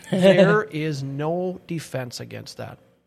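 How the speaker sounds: slow, laughing, letter-by-letter speech.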